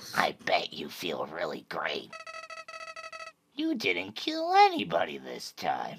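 low, soft, sing-song voice. Speaker reading game dialogue aloud, in Flowey voice.

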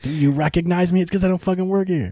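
ranting delivery.

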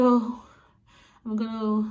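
winded, panting, out-of-breath speech. Vlogger getting ready before a friend picks them up, out of breath. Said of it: "I'm out of breath".

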